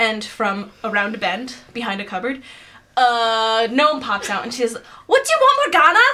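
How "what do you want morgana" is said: put-on Scottish accent, higher and louder. Voicing a gnome cook greeting the visitors early: scottish accent. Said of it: "They're all Scottish".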